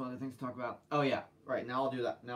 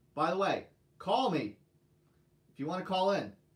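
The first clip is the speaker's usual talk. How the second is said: loud high-pitched shout; 6 semitones higher, 6 dB louder than usual. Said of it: "stop yelling".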